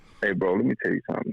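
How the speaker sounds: friendly tone dropped for a hard menacing voice. Retelling a threat to a heckler, dropping professional mode: retelling a menacing threat. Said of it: "when your demeanor goes from one thing to the other".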